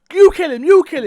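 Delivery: shrill, very high, full-volume shouting. Recounting a gunfight, the speaker repeats his shout to the other shooter; retelling a shout. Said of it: "So I was shouting".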